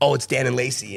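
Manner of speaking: ordinary talk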